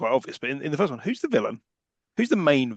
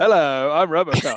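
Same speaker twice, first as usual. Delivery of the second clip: loud, sassy mock robot-cop voice. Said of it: "holding his hand there in a sassy way".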